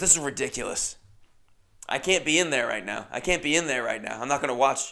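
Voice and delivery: put-on steaming-mad, fed-up, angry rant. Retelling what an upset tall guy said to him, acting steaming mad. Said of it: "steaming mad".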